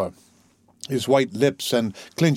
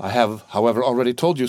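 plain

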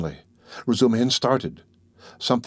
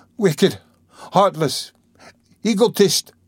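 high, indignant crying-out exclamation; 8 semitones higher, 3 dB louder than usual. Dunya, after he has gone out of the room, crying out. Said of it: "cried Dunya".

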